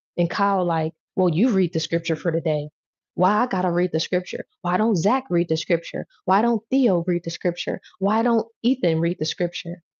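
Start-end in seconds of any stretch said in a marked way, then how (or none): 1.1-9.7 acted-out sassy, belittling, defensive tone with attitude. Acting out a student called on to read in class: imitating someone catching an attitude. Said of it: "catch an attitude and try to start belittling people".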